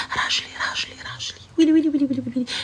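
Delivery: hushed whisper under the breath. Retelling how a friend on the phone answers, imitating someone whispering. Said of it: "pourquoi tu chuchotes ?".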